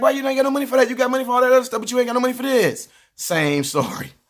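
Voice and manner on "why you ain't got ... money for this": put-on high-pitched complaining kid voice. Acting out a child arguing with a mom in a store: imitating a complaining kid. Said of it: "You be like".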